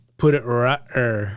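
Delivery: put-on country rural dialect. Describing how a family member spoke, the speaker imitates a relative's country speech. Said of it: "He was like".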